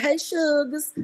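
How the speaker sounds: put-on, down-home country accent. Imitating how a man greeted them the other day, fake country accent. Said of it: "He talks like he's from the country".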